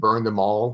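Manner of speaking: usual speaking voice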